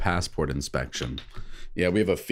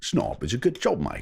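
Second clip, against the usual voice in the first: accent that sounds Australian; 3 semitones higher than usual. Demonstrating a line he was asked to record, Michael Caine impression. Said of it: "It sounds Australian".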